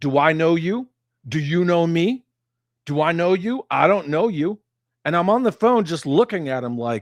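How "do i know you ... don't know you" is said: put-on confrontational voice, higher and louder. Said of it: "you step in front of them and go".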